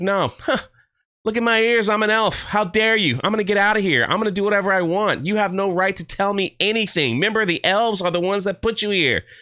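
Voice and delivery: huffy, indignant, bitter, snappy snapping back. Retelling a show's scene, imitating a character: bitter and snappy. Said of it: "she's just being bitter and snappy".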